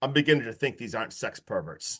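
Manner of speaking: low, dead serious voice. Retelling a favorite movie line: imitating Tom's deadpan delivery. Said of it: "Tom literally deadpan, looks her in the eyes, so serious".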